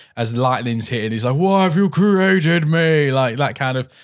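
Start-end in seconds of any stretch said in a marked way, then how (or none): 1.4-3.1 slow, tormented, Shakespearean-style howling. Imitating the monster howling out the window as lightning hits: howling like Frankenstein's monster. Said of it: "I like him howling out the, out the window".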